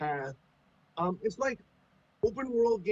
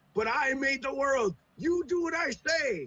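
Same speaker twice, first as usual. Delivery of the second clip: acted irate, put-out, angry, high, drawn-out tone; 9 semitones higher than usual. Retelling a cartoon episode where Dexter gets mad at players: imitating an angry Dexter. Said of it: "he gets mad and he's like".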